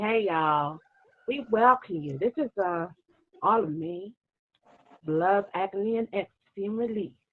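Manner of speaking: little, slight put-on American accent. Welcoming everyone with some international stuff going on: put-on American accent. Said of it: "I'll do my little American accent and say".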